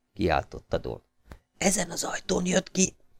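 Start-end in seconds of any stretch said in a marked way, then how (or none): 1.6-2.9 soft, hushed whisper under the breath. A crouching guard answers Don's shouted question, whispered. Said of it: "suttogta az őr".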